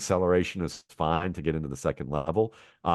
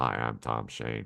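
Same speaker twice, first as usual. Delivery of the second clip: very low, creaky, level monotone drone; 7 semitones lower, 5 dB quieter than usual.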